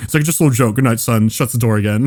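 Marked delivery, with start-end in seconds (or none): none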